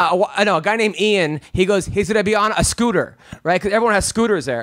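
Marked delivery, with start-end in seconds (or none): none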